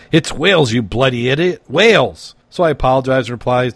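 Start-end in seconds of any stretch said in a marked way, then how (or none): 0.1-2.3 furious, angry screeching. Telling a joke, the speaker acts out a woman in a bar: retelling an angry screech. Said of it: "One of them angrily screeched".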